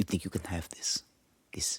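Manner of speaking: breathy, whispered put-on Spanish accent. Voicing a character in a joke bit, Spanish accent. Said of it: "She's Spanish again".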